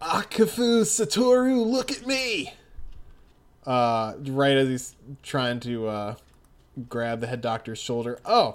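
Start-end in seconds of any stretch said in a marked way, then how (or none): 0.0-2.5 frustrated, fed-up, high-pitched, drawn-out voice. Voicing Josuke as he shouts at the head doctor, frustrated Josuke voice. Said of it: "he just sounds, like, frustrated".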